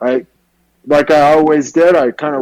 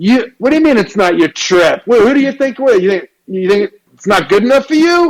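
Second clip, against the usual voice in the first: put-on New York street accent, pitched up; 6 semitones higher than usual. Retelling a man who asked if he'd thought about being a hairstylist, New York accent. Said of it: "He talked like this from New York".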